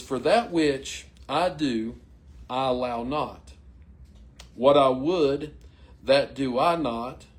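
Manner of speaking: very slow, careful, word-by-word reading. Speaker reads verses aloud to listeners before discussing them, reading very slow. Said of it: "I'm going to have to read them very slow".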